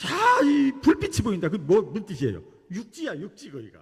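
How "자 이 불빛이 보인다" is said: loud high-pitched shout. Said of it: "소리를 지르는 거예요".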